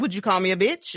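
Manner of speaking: ordinary delivery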